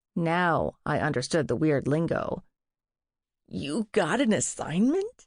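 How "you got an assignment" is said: high, squeaked-out, jittery, nervous voice. Reading a story where a nervous character asks a question: squeaked. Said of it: "Woody squeaked".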